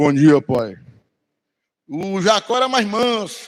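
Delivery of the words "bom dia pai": very low, heavy, thick, put-on disguised voice. Acting out Jacob imitating his brother's voice, in a deep thick voice. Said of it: "voz grossa".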